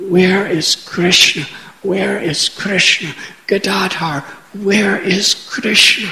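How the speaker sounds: imitated pathetic crying voice. Retelling how he cried out with tears pouring, imitating pathetic crying. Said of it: "in a pathetic voice crying out".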